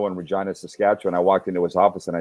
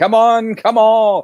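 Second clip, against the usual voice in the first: very high, very slow, drawn-out carnival barker call; 9 semitones higher than usual. Telling the other speaker they remind them of a carnival tent barker, using a carnival barker voice. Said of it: "A guy at the carnival welcoming people into the tent".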